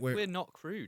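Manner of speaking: insincere, sarcastic-sounding voice. Insisting the show is not crude: insincere sarcastic-sounding tone. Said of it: "I said that in such an unsincere way".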